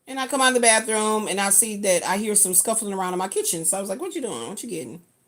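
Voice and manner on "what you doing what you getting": mock easygoing, mild, casual, nothing mean. Retelling asking someone in her kitchen what he's getting: imitating a mild question. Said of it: "not in no mean way".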